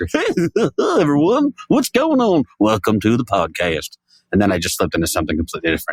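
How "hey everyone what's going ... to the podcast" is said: high, swooping sixties cartoon character voice. Podcast host opens the show in a sixties cartoon character voice. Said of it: "Like a sixties or seventies era cartoon character".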